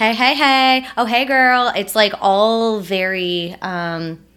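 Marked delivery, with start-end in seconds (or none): 0.0-1.7 put-on loud, pitched-up, showy, in-your-face theatrical voice. Retelling how greeting friends sounds: imitating own theatrical greeting. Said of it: "I'm always very theatrical when I see people".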